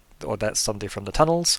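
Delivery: ordinary talk, nothing marked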